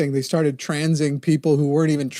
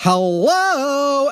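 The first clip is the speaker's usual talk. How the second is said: put-on flamboyant voice, higher in pitch; 11 semitones higher, 3 dB louder than usual.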